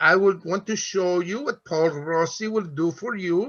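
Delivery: put-on Cypriot accent. Retelling a salesman's pitch at a pen show: imitating Andy's Cypriot accent. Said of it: "he's from Cyprus".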